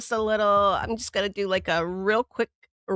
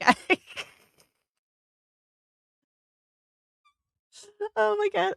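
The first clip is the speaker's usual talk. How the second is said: voice cracks into a very high squeak; 12 semitones higher than usual. Speaker getting set up to talk to the girls, in a squeaky voice. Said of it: "that was squeaky".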